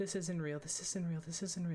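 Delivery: repetitive muttering to oneself. Acting out someone dragged out of a fire, muttering to himself. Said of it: "He's like muttering to himself".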